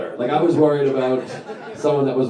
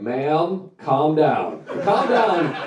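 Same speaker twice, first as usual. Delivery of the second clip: very slow, very drawn-out, rude emergency dispatcher voice; 3 semitones higher than usual. Retelling how a 911 dispatcher answers a caller: imitating a rude dispatcher. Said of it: "they're always leave with the same thing".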